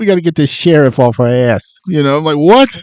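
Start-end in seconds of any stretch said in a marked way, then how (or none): 0.0-1.8 put-on light touch of Boston accent. Mocking a man's speech, the speaker imitates his little Boston accent. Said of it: "throws in a little Boston in there".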